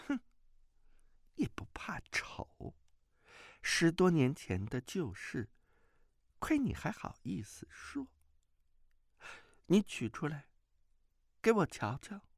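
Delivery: bashful, embarrassed tone. A woman answers a man who kept her old handkerchief for years, shy and soft-spoken. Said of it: "马夫人神色腼腆，轻声说".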